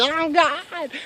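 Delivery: high screaming at the top of lungs. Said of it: "Just screaming my lungs out".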